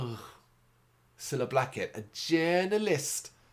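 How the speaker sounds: amateur, rough attempt at a Liverpool Scouse accent. Speaker imitating how someone might label them, in an attempted Scouse accent. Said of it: "my attempt at a Scouse accent there".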